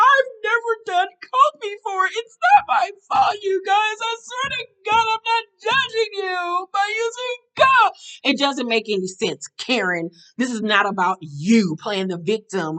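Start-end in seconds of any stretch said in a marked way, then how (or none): 0.0-7.9 very high, whiny, fake sobbing voice. Mocking the idea of crying among cokeheads, mock crying, whiny. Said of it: "Why the fuck would I start crying like".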